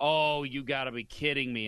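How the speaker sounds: ordinary delivery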